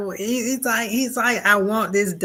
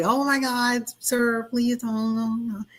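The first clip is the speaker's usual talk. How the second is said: put-on meek nerdy voice, higher pitch; 4 semitones higher than usual. Retelling a movie scene, imitating Christopher Reeve's nerdy Clark Kent. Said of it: "shrugs his shoulders down like".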